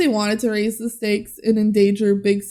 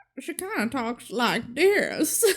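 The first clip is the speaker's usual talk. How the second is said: put-on little country girl voice, quieter; 3 semitones higher, 6 dB quieter than usual. Answering a request to do the character's voice: Tilly Green voice. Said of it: "Can you do your best Tilly Green voice?".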